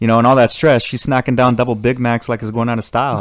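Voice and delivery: ordinary talk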